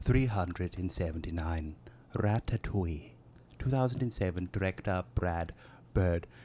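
American's put-on English accent. Reading a movie blurb aloud for the others: put-on english accent like an american's. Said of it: "You sounded like one of the Americans doing an English accent".

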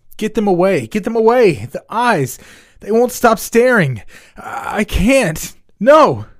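panicked, frantic, terrified yelling, shrill and very high. A student flailing on the ground before a crowd, frightened, frantic yelling. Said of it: "a frightened student yelled as she frantically flailed".

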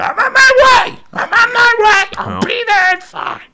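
put-on very high, slow screaming. Retelling a man behind you in line on his phone: imitating someone screaming on a phone. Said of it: "the guy's behind you just screaming".

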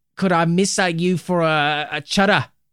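put-on Manchester accent. Asked to do their best Mancunian accent, the speaker tries a best attempt at Mancunian accent. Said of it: "Darcy asked us to do our best Mancunian accents".

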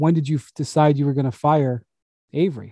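plain

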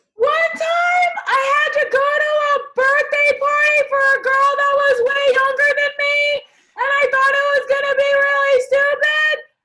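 very high, loud squeaky voice at top of range. Asked in a game to tell a story, speaking in your highest voice. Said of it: "in your highest voice".

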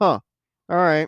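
flat, deadpan, underwhelmed, unimpressed delivery. Showing how Jody delivers the line: imitating Jody's flat delivery. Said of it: "That's how he delivers the line".

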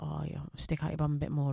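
very quiet, hushed, creaky, rough-edged voice. Imitating a man in the weight area who corrects her form: imitating a man at the gym correcting form. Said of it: "someone's gonna come to me and be like".

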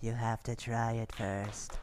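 strange voice, very deep and hushed, low murmur. Retelling what a voice said after someone tried something, in a weird voice. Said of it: "there's this like weird voice that goes".

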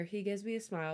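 plain reading voice

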